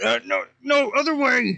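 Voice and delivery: shrill, booming, drawn-out, very high, very loud half-orc cry. Voicing a half orc as a player jumps the wrong way: half orc voice. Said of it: "the half orc is just like".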